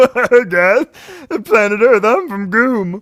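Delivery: high-pitched, loud, silly creature voice. Describing the alien Goom from a video, speaking as Goom. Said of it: "We're doing the same voice".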